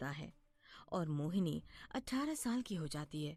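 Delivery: ordinary delivery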